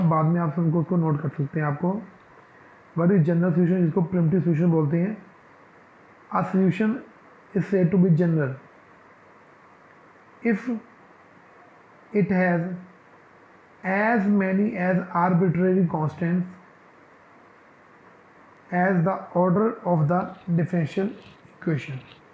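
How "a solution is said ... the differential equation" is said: slow, deliberate, dictation-style delivery. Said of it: "मैं आराम से धीरे धीरे डेफिनेशन बोलूँगा".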